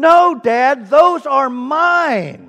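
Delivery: put-on child's shout, high-pitched and loud.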